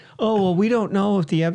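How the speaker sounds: put-on innocent, know-nothing voice, feigning ignorance. Mocking those who profit from old ways by playing stupid: imitating people playing stupid. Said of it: "they just play stupid".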